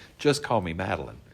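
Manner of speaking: ordinary talk, nothing marked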